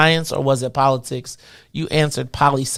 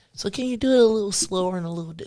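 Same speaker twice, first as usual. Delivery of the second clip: mock gentle coaxing, coddling voice, higher and quieter; 5 semitones higher, 7 dB quieter than usual. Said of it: "so they know how to coax them".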